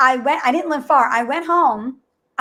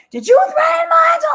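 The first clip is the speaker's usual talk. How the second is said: furious yelling, very high, temper fully lost. Retelling confronting a driver through his car window: retelling losing temper. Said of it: "I lose it".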